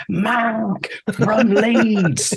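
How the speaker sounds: put-on, very high top-of-the-lungs shout. Retelling how a friend's name gets yelled down the phone: retelling a shout at top of lungs. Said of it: "at the top of my lungs".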